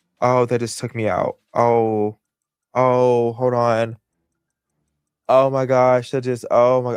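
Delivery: choked up, tearful, crying, words breaking off. Reacting to her husband's example, the speaker breaks down, crying while talking. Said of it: "I'm crying".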